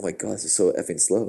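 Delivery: plain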